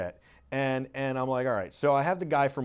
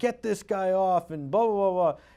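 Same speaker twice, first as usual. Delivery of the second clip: put-on higher-pitched heckling yell; 6 semitones higher, 3 dB louder than usual. Retelling people screaming at the speaker on air: imitating people yelling. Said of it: "people are screaming and yelling at me".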